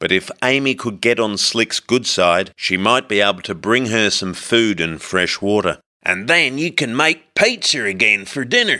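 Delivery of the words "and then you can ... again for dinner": insistent, pressing, animated coaxing with swooping pitch. A narrator reads one character speaking to another, urging. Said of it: "Slick urged".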